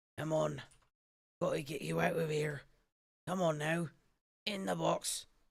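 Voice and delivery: husky, hoarse, hushed half-whisper. Reading a story: an unseen speaker behind a creaking door, in a hoarse half-whisper. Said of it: "someone speaking in a hoarse whisper".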